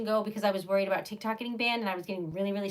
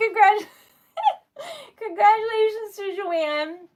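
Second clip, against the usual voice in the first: very high-pitched, crying, holding back tears; 12 semitones higher, 6 dB louder than usual. Congratulating a viewer after thanks for support, holding back tears. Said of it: "I am trying not to cry".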